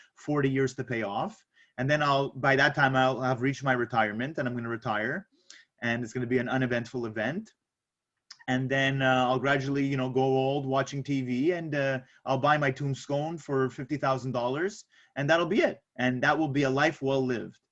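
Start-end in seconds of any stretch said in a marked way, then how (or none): none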